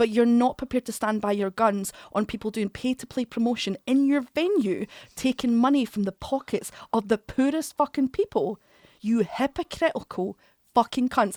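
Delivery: furious, heated, angry rant, letting it all out. Speaker recounting what he told the venue, retelling an angry rant. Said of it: "I'm sorry to sound so angry about it".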